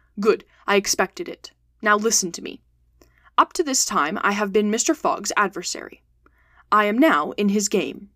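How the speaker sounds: ordinary delivery, nothing marked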